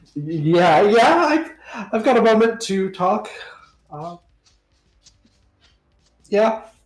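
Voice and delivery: very high, nervous stammer. Voicing Pablo, asked by Rolf for a moment to talk, with a nervous stutter. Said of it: "he like stutters a little bit".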